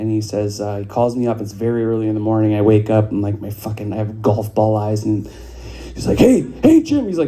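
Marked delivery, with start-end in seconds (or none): 6.2-7.1 very high, alarmed, panicked voice. Retelling an early-morning call from a father: imitating panicked speech. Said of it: "very panicked".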